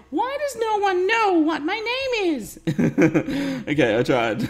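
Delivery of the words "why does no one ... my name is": put-on very high girly voice, pushed way up. Asked by a viewer to speak as the game's expert character; Alana's voice. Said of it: "he's asked me to say in Alana's voice".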